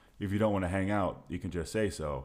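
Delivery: ordinary delivery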